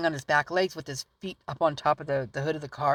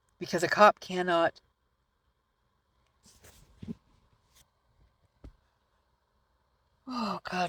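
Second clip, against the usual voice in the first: talking through a yawn, higher pitch; 4 semitones higher than usual. Talking about a cop signing papers, yawning while talking. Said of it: "I'm yawning so crazy".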